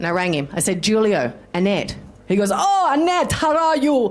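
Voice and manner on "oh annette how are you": very high-pitched, badly faked Brazilian accent. Retelling a phone call, acting out the man's greeting in a bad Brazilian accent as Julio. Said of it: "That's my Brazilian. very bad accent".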